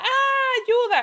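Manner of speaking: put-on loud, high-pitched child screaming. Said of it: "un niño grita".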